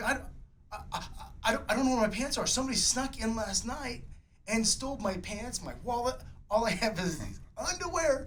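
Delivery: panicked, high, stammering voice. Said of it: "He's panicking".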